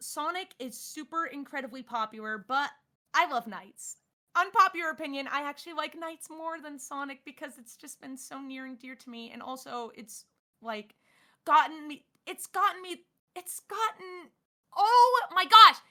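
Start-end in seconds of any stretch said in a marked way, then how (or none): 10.0-15.7 high, looping stutter, stuck restarting. Talking about a beloved game franchise, stuttering. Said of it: "Can I stop stuttering for five seconds?".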